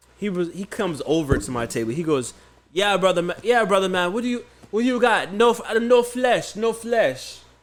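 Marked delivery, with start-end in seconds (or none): 2.7-7.4 put-on accent from Trinidad. Retelling what a Trinidadian vendor said at his table, in a Trinidadian accent.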